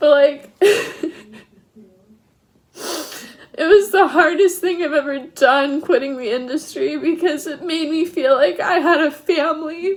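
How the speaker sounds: tearful crying speech. Talking about quitting the industry, crying while talking. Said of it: "ugly crying".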